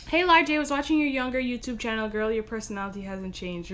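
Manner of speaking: ordinary delivery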